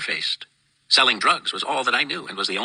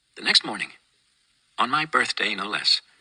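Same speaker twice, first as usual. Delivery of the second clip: plain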